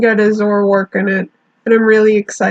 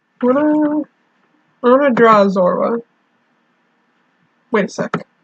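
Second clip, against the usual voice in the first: speech broken up by hiccups; 2 semitones higher than usual. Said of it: "I got the hiccups all of a sudden".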